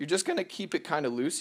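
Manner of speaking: voice breaking and cracking on the words. Explaining how to pull the mesh loose, the speaker's voice cracks. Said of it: "You hear that voice crack?".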